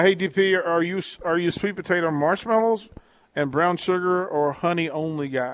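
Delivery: ordinary delivery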